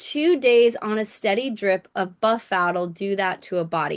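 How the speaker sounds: ordinary talk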